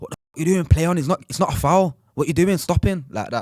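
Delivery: put-on, high-pitched shout. Retelling a match where a player stopped for a foul, retelling shouting at a player. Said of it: "I start shouting at Charlie like".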